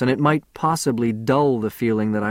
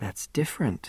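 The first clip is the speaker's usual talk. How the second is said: cooing, soft, much quieter; 9 dB quieter than usual. Narrator reads a woman's line as the man slips his arms around her: cooing. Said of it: "she cooed".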